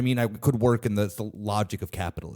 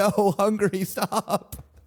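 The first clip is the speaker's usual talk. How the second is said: high, meme-style yell; 7 semitones higher, 4 dB louder than usual. Closing a rant about economic policy, the speaker breaks into mock yelling. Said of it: "just yelling from the car".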